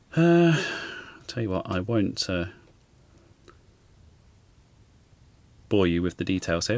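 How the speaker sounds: quiet muttering and mumbling. Reading through a project's instructions on camera, muttering.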